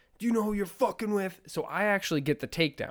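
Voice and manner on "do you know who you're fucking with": mock, high, rapid shouted yell. Recounting a fight, the speaker quotes the man grabbing him; imitating a man yelling. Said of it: "he's yelling at me like".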